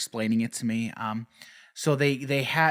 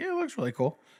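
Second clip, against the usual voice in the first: high, far-off, casual-sounding voice. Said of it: "I'm like".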